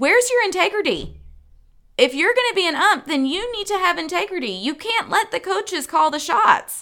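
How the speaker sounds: put-on screeching, pitched way up, high-pitched screaming. A parent retells what she kept shouting at the umpire: retelling her own screaming. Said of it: "I kept screaming at the ump".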